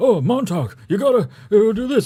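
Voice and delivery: put-on pitched way up, loud old man. Describing the audiobook read by Ray Bradbury: Ray Bradbury impression. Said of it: "his voice is very like this".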